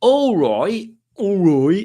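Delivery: terrible put-on Brummie accent, drawn out. Reading out a message on quiz night, speaker uses terrible Brummie accent. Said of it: "that was my terrible Brummie accent".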